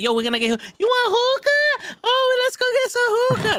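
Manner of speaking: very high, giddy, swooping sing-song switched-up voice. Mocking how some people talk, imitating their sudden high-pitched voice. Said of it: "Their voice will instantly change into that creature".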